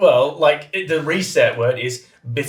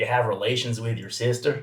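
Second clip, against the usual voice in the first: put-on low, soft deep-south Southern US accent; 5 semitones lower, 9 dB quieter than usual. Asked about an American accent, showing the only one they can do: put-on Southern US accent. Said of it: "I can only do Southern".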